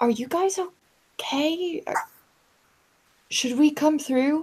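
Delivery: hushed, breathy stage whisper. A character leans into a tunnel, calling to those on the other end: half-whispering. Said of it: "I lean into the tunnel and whisper".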